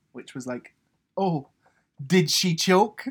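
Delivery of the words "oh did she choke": high, drawn-out, catty, snide tone. Retelling a comment heard during the get out: imitating Anne-Marie's snide comment. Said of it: "a snide comment from Anne-Marie".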